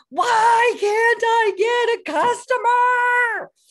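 high, loud frustrated yell. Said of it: "yelled in frustration".

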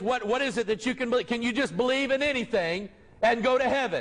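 normal talking voice

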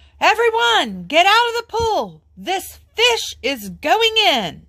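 very high, slow, drawn-out yell. A fireman at the pool calls to everyone in it, yelling. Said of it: "The fireman yelled".

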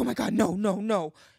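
slow, drawn-out, horrified, dismayed freak-out. Retelling how a mother reacted to a joke: imitating someone freaking out. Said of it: "She starts freaking out".

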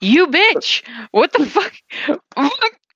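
high, laughing, exasperated and outraged cursing. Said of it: "I'm sitting there going like".

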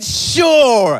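loud, drawn-out, mock enthusiastic word. Showing how a dad's reluctant answer gets twisted, the speaker gives a mock-enthusiastic 'sure'. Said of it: "twisted it to make it sound enthusiastic".

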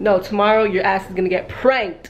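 ordinary delivery

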